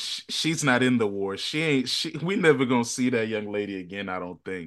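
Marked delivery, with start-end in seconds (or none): none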